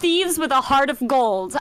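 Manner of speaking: ordinary talk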